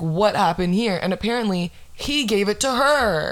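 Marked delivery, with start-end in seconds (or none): none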